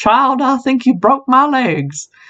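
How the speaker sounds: put-on terrible, slow, high old Southern lady accent.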